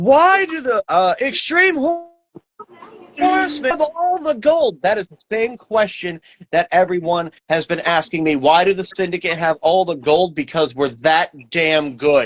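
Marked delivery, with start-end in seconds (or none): 0.0-4.8 very high, drawn-out announcer scream. Recalling a line from the mic: imitating Joey Styles screaming. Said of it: "I hear him screaming".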